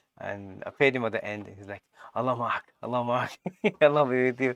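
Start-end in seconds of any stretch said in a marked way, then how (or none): 2.1-4.6 mock, really frightened, spooked voice. Retelling the taxi driver's words on being paid: imitating an afraid taxi driver. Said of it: "Really, like, afraid".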